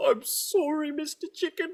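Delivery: very high, weepy, tearful little devil voice. Voicing a devil forced to kill a chicken: tearful devil voice. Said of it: "sheds a little devil tear".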